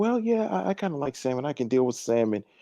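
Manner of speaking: meek, spineless, agreeable yes-man voice. Imitating a man going along with his partner, mocking a simp. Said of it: "An old simp guy be like".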